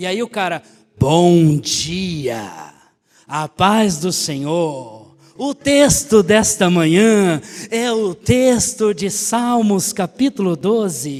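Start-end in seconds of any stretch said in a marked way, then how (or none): 1.0-11.2 very slow, polished, eloquent radio announcer delivery. Describing a man's morning recorded message, the speaker uses a Pastor Jackson-style radio voice. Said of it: "uma voz de rádio locutor".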